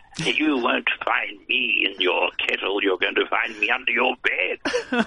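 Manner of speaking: high-pitched fairy-tale storybook witch voice. Recalling reading a storybook aloud with voices, in a witch voice. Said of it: "said the witch".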